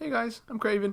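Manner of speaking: put-on high-pitched American voice. Mocking an actor's American voice as a villain: higher-pitched American voice as Kraven. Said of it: "his voice tends to be higher pitched".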